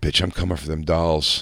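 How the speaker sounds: whispering menacingly. Retelling whispering a threat into a friend's mother's ear: whispering menacingly. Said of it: "I whisper in her ear".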